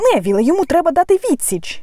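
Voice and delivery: very high-pitched cry, called out. Narrator reading a story, one character urging another: exclaiming. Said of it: "вигукнув Рон".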